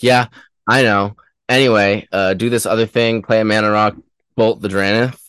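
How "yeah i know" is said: put-on smug, offhand tone faking modesty. Player retelling winning a counter war and drawing a lightning bolt, mock-smug. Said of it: "I got to be all smug and pretend".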